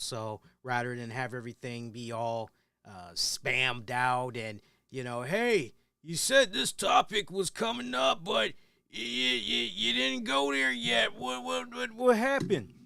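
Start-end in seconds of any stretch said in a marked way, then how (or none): 5.2-12.6 strained, croaky, high, rough complaining voice. Speaker acts out viewers who read episode synopses, imitating a complaining viewer. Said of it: "Trying to do that voice, that actually hurt".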